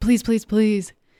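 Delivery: acted begging, pleading tone. Speaker recounting asking a nurse to take pictures, retelling begging the nurse. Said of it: "I'm begging the nurse".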